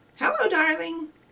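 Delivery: high-pitched put-on talking parrot voice. Leading a movement game, showing how a parrot says hello, in a parrot voice. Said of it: "Do your very best parrot voice".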